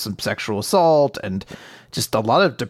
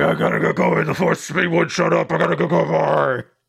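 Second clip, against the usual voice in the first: put-on gravelly superhero growl; 5 semitones higher than usual.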